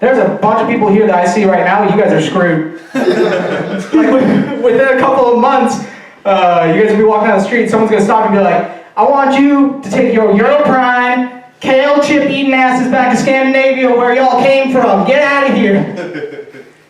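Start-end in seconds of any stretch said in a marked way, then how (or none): 9.0-16.5 put-on Southern US accent, pitched up.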